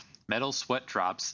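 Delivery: ordinary delivery, nothing marked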